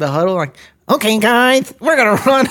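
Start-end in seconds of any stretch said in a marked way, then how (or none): 0.9-2.5 high, cartoonish, puppet-like character voice. Imitating a quarterback calling a play in the huddle: imitating Patrick Mahomes's Muppet-like voice. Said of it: "he sounds like a Muppet".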